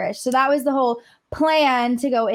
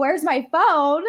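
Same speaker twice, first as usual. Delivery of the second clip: put-on frantic scream, calling out; 4 semitones higher than usual. Retelling screaming after someone took the phone: imitating own scream. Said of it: "I'm screaming".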